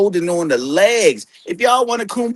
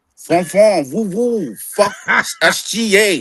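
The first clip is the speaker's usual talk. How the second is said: put-on French accent, very slow and drawn way out. Imitating a basketball player with a mock French accent. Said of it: "Let me get your French accent for you".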